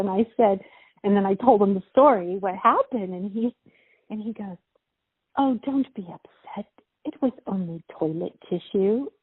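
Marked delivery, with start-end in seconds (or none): 5.4-9.1 put-on soothing, consoling English accent. Retelling a man's reply to the speaker's story, in his English accent. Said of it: "in his English accent".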